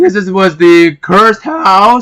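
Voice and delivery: voice cracking. Talking to viewers about a Minecraft house, voice cracking. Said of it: "Voice crack".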